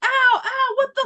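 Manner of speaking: mock very high, shrill, loud, pained yelping. Retelling being stung by bees all over the legs, acting out the yelling. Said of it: "yelling like".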